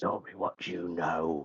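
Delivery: grim, vigilante-style superhero voice. Describing a changed Mephiston demanding answers, speaking in the Batman voice. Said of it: "Almost in like the Batman voice".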